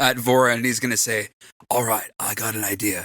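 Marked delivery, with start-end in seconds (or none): 1.7-3.1 hushed half-whisper, all breath. Voicing a character pulling another aside to talk: half-whisper. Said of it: "in his whisper".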